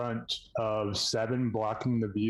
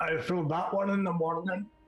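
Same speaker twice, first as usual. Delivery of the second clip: put-on raised-pitch Scottish accent; 7 semitones higher than usual. Voicing a line in the game, accidental Scottish-sounding accent. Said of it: "that came out, like, Scottish or something".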